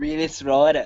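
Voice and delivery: put-on, attempted Australian accent. Trying out an accent in the middle of a conversation, attempted Australian accent. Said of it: "My Australian accent".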